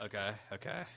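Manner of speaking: very quiet, barely audible, voice cracking with nerves. Accepting a challenge while scared, nervous with voice cracking. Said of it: "You hear my voice crack?".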